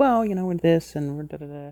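put-on mild, calm tone. Retelling how district people spoke at a parent meeting: imitating calm, conservative talk. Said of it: "they speak about a very calm, kind of conservative fashion".

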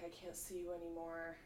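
put-on trembling, sad voice. Retelling how a man spoke when sent away: imitating someone trembling and sad. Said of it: "trembling and sad and was like".

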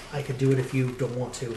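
understated, soft and quiet delivery. In character, a player offers to do it instead of the other player: kind of quietly. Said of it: "says Giz kind of quietly".

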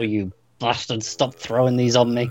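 speaking through clenched teeth. Retelling how Kirk sits under falling tribbles: Kirk through gritted teeth. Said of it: "grit his teeth and go".

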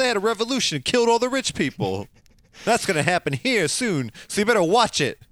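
put-on high New York accent. A Superman character delivers a warning: Superman with New York accent. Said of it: "I don't know where his accent came from".

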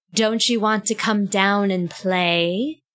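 creepy, eerie voice with an echo. Game master voicing an unseen figure calling up a stairwell, creepy, echoey voice. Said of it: "but it's also really creepy and echoey".

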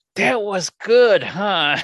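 mock slow gritted-teeth voice. Retelling friends' reaction after a bad movie, imitating them through gritted teeth. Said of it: "that gritted teeth smile".

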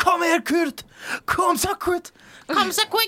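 shrill, very high cheering announcer shout. Retelling how norwegian tv commentators cheer a stage win: retelling commentators' shouting. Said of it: "de råber".

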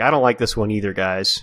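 put-on sad voice. Imitating how the actor sounded saying the Phil line: imitating a sad-sounding Phil. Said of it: "Phil sounds really sad while he's saying it".

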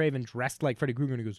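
plain

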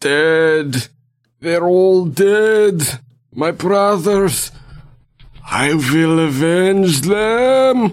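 loud, high, ghostly, disembodied spirit cry. A narrator voices a blue mote of energy rising from the floor, disembodied voice crying out. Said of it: "a sort of disembodied voice cry out".

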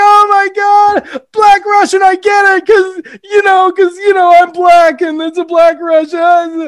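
very high, shrill, loud, uncontrollable laughing. Retelling a movie scene where he mocks a bartender's joke: imitating Eddie Murphy laughing uncontrollably. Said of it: "Murphy's reaction is to laugh uncontrollably at it".

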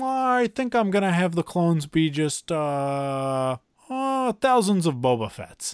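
slow musing, drawn-out uh. Imitating George Lucas pitching an idea for the prequels: imitating George Lucas. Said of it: "George Lucas going".

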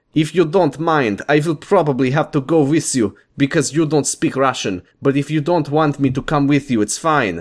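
put-on Russian accent in English. Reading a story aloud, voicing the blonde woman: Russian accent. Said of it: "It's an outstanding Russian accent".

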